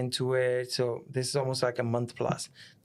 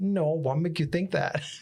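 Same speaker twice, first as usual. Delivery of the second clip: mock giggly chuckling through the words; 4 semitones higher than usual. Retelling answering the ambulance worker's drug question: imitating own laughing reply. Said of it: "Laughing like a crackhead".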